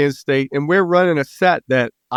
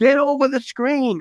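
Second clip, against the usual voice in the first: mock coach yelling, high and screamed; 10 semitones higher than usual. Recounting a game watched from the sideline, act out someone screaming at a kid. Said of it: "Dana's screaming at the kid".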